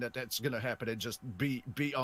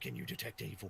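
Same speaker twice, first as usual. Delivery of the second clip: soft whisper, much quieter; 3 semitones lower, 8 dB quieter than usual. In a role-play, turning to a companion while passing by, soft whisper. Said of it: "softly whisper".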